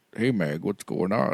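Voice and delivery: put-on teenage boy voice, low. Showing how a character sounded in season one: low Chris Griffin voice. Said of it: "he's doing it really low".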